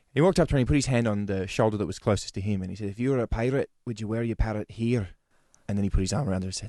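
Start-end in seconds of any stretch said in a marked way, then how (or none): 2.8-5.0 put-on Scottish accent. Retelling a Scottish man's line to a woman in a Sydney bar, imitating a Scottish accent. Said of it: "Did he bung that voice on".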